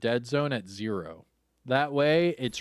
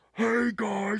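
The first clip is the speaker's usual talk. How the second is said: mock shouting, higher; 9 semitones higher than usual. Imitating a player with voice boost up too high: imitating someone yelling. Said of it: "Please stop yelling at me".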